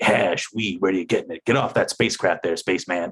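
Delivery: pulpy, super tough, hard-boiled tough-guy delivery. Retelling a cop questioning young people: imitating hard-boiled cop speech. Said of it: "that sort of hard-boiled speech".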